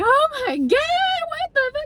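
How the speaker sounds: mock hysterical laugh-cry, very high and swooping. Retelling a frantic escape onto a bus: imitating own hysterical reaction. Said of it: "and we're just hysterical".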